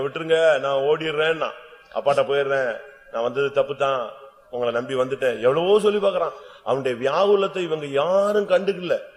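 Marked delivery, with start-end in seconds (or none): none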